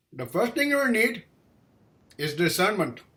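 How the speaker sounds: put-on Indian accent. Quoting what a man told the speaker: indian accent. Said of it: "an Indian accent".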